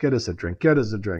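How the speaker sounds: put-on whisper. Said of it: "I start whispering to myself".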